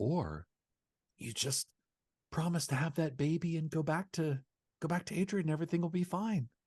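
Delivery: quiet hushed voice. Retelling what a character says to her in the show: imitating a quiet voice. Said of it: "and he gets real quiet".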